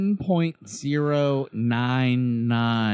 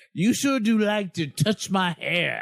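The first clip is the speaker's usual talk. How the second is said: put-on southern drawl, pitched higher; 5 semitones higher than usual. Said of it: "Rufus T. Buford, like, Southern voice".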